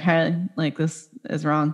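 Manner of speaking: normal talking voice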